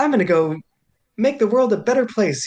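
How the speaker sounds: high, chipper, do-gooder little guy voice.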